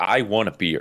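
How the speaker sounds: acted stubborn, insistent, firm, adamant tone. Retelling insisting on getting a beer: imitating being adamant. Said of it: "And I'm adamant".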